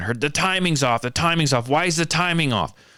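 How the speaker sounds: high-pitched, critical, jeering shout. Retelling a complaint from the group behind: imitating someone yelling. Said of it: "Someone yell from the background".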